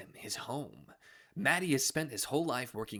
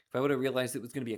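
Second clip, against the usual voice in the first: ordinary delivery, nothing marked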